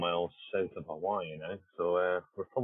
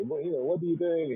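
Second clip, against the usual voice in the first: put-on heavy French accent, pitched very high; 10 semitones higher than usual. Retell how he would sit down in your office and speak, in a big, thick French accent. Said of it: "his big, thick French accent and say".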